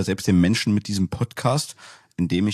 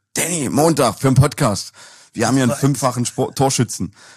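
put-on tipsy, high, slightly slurred drunk voice; 6 semitones higher, 6 dB louder than usual. Retelling a phone call he got from a caller: imitating slightly slurred speech. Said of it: "mit etwas lallender Stimme".

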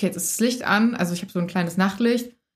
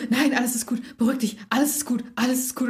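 put-on panicked, freaked-out man's voice; 4 semitones higher than usual. Retelling a night scare, quoting the man she yelled at: acting out a freaked-out man. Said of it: "er hat sich ausgerastet".

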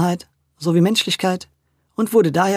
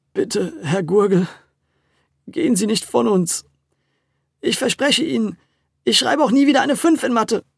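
shaky, trembling, stammering voice, higher pitch; 4 semitones higher than usual. Luis speaks to herr gurgel, stammering in a shaky voice. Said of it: "stammelte nun auch Luis mit zittriger Stimme".

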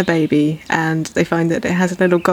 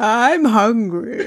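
mournful, sleepy, lugubrious, pitched-up creature voice; 5 semitones higher than usual. Quoting a plant character all week, in a sleepy, lugubrious plant voice. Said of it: "rather good with that voice".

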